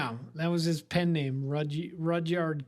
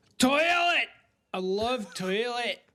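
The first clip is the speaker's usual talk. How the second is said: higher-pitched fake Scottish accent; 7 semitones higher, 3 dB louder than usual. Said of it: "pronounce it in a Scottish accent".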